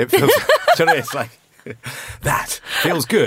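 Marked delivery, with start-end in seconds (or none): 2.2-3.3 cheesy radio DJ voiceover. Doing a mock voiceover to sell the album, in a cheesy DJ voice. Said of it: "with my sort of cheesy DJ voice on".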